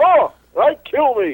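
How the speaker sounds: very high, loud, slow, drawn-out belting voice. Asked to say a line like Alf: Alf voice. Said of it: "That's pretty good, Alf".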